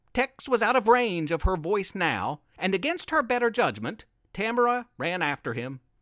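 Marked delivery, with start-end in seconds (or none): none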